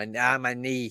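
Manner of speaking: failed attempt at Boston accent. Quoting a man who said he hurt his knee, bad Boston accent. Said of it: "I can't do a good Boston accent".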